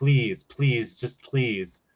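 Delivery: mock pleading, begging voice. Imitating her speaking through the tv to advertisers, begging them. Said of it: "she's literally at the T V being like".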